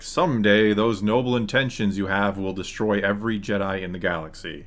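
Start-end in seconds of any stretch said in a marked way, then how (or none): none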